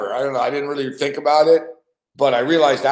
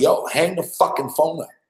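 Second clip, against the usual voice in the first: loud shouting; 3 semitones higher than usual. Recounting a caller left on the line during a break, retelling a yell. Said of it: "I'm yelling into the mic".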